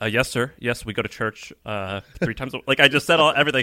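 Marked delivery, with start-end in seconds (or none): 0.0-2.6 put-on nervous tone. Retelling answering a priest's questions before marriage: imitating own nervous answers. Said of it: "I was very nervous".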